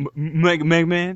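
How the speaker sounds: mock, put-on stammering voice. Retelling a voiceover session, imitating a stammering voice actor. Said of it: "I love how he's stammering".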